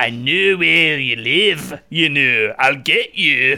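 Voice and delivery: terrible put-on Scottish accent. Quoting what a man said to the speaker, in a bad scottish accent. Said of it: "That's the worst Scottish accent in the world".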